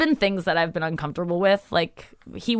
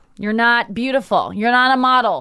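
put-on voice of a woman about eighty. Retelling what an eighty-year-old woman tells the speaker: imitating an eighty-year-old woman. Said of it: "she'll tell me things like".

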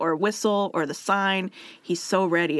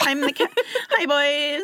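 put-on valley girl voice, pitched higher; 8 semitones higher than usual.

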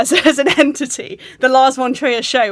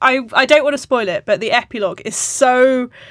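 ordinary delivery

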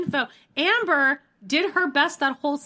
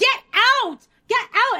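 shrill, loud screaming; 9 semitones higher, 5 dB louder than usual. Retelling how someone screamed at another person: retelling a scream. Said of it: "Amber is screaming at Matt".

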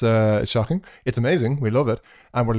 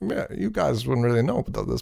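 relaxed, loose, easygoing voice with creaky texture; 4 dB quieter than usual. Imitating how a politician sounds on podcasts: chill Barack Obama podcast voice. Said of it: "when he does podcasts now, he's all like".

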